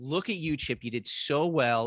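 slow, condescending put-on tone. Retelling an art teacher praising a painting: imitating a condescending teacher. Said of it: "so condescending".

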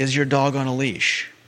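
put-on yelling. Retelling a lady in the park asking about the leash: imitating someone yelling. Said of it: "yelling at me".

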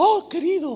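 loud, fawning, flattering tone. Retelling a Bible verse about how Absalom greeted people, mock-flattering. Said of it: "con ese tono así lisonjero".

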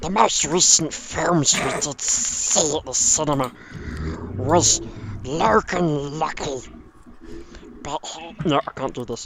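slow, drawn-out creature voice. Naming the most recent film seen at the cinema: Gollum voice. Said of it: "in the style of Gollum from Lord of the Rings".

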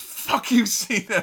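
loud passionate yell. Retelling a fan's moment in the wrestling crowd: imitating a fan's passionate shout. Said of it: "the passion in his voice".

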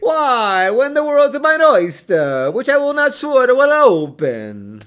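put-on very high Italian accent. Performing Shakespeare parts as Italian immigrants in a stereotypical 1930s movie. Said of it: "like we were Italian immigrants in a stereotypical 1930s movie".

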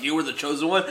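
ordinary delivery

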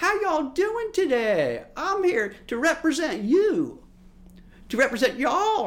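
very high, drawn-out, fake southern drawl. Mocking a boston politician campaigning down south: fake southern accent. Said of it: "Where are you coming with this southern accent?".

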